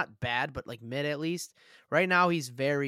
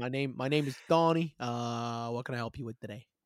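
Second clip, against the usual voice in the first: put-on Italian American accent voice. Acting out a practice call as the guy at the Coalition: Italian American coalition guy voice. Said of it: "I'm the guy at the Coalition".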